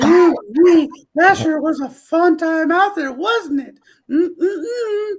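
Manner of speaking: very high, slow, drawn-out put-on character voice. Right after getting off last night's stream, in a Herbert voice. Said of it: "Doing the whole Herbert thing".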